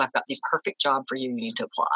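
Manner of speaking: ordinary talk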